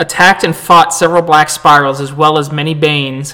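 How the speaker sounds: plain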